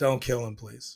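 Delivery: desperate, begging, pleading voice. Retelling own reaction while watching the scene: imitating own begging. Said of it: "I'm begging for his life too".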